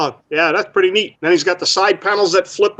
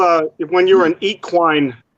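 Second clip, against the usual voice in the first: plain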